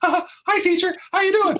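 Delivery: pitch goes way up into a squeak. Describing puberty, voicing a boy greeting his teacher, Mickey Mouse voice. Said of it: "the first period we sound like Mickey Mouse".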